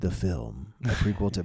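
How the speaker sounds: dramatic movie-trailer announcer voice. Reading a ChatGPT film summary aloud to listeners, in a movie trailer voice. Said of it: "I feel like reading it like in a movie trailer voice".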